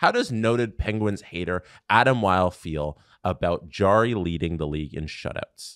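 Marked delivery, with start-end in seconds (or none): none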